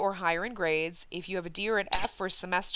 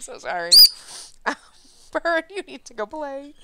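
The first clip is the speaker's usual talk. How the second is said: talking through giggles, laughing through the words; 6 semitones higher than usual. Apologizing to viewers after a bird screamed into the microphone, laughing while talking. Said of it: "I can't stop laughing now".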